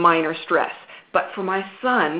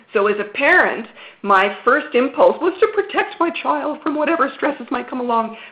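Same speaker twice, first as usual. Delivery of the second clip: ordinary delivery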